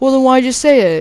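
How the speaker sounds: put-on high, screaming, accusing yell. Retelling what he was asked after a backpack joke, imitating someone screaming. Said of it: "he's like screaming at me at this point".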